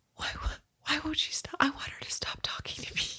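hushed, barely audible, very quiet whisper. Retelling what a friend whispered to the speaker while a woman kept talking: retold whisper. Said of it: "he looks at me dead ass in the eye and he whispers".

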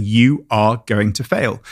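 put-on deafening voice. Recalling failed driving tests, imitating a booming, deafening voice. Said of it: "this booming, deafening voice was saying".

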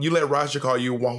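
ordinary talk

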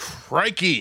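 exasperated crikey. Asked for his best exasperated crikey, he answers: exasperated crikey. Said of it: "everyone's best exasperated crikey".

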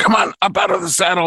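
put-on shout. Retelling a story about a fitness class, the speaker plays the instructor shouting at the rider, imitating an instructor yelling. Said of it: "she's yelling at me".

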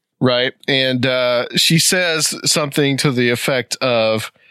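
plain

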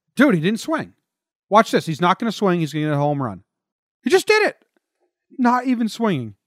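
stunned, awestruck, aghast running commentary delivery. Imitating the other host watching batting practice, amazed. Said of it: "do an impression of you watching Giancarlo's batting practice".

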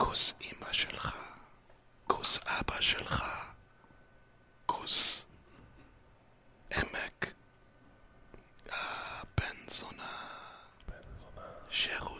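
soft, hushed ASMR whisper, barely voiced. Asked for some quick Hebrew ASMR, the speaker answers in an ASMR whisper. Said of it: "Just whisper".

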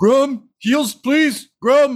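shrill, very high, loud shout. Voicing a burning creature calling to an ally: yelling for heals. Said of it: "he just yells".

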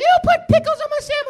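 very high, over-the-top, exaggerated put-on voice. Retelling a complaint from grown women customers at work: exaggerated funny voice imitating a customer. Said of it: "That's not how they sound, but it's funnier that way".

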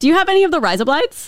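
Aussie accent throughout. Co-host demonstrating how a phrase sounds to another co-host, Australian accent. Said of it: "in an Aussie accent".

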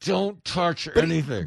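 put-on speech through clenched, gritted teeth. Acting out someone in a grocery store's dairy aisle, mimicking clenched-teeth speech. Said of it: "saying through clenched teeth".

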